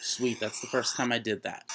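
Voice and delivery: normal talking voice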